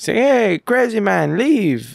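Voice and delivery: awful put-on Italian accent. Quoting a movie character's line from a scene, in an awful Italian accent. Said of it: "Awful Italian accent".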